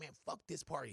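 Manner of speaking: barely audible, very soft grumble under the breath. Retelling a private complaint at a party: muttering under breath. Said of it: "and under my breath, I'm like".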